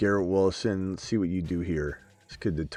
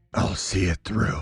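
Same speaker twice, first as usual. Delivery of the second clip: dark, gravelly comic-book superhero voice. Quote Pony, who is not leaving, in a Batman voice. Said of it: "in his Batman voice".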